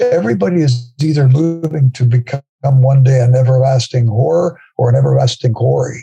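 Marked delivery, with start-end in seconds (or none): none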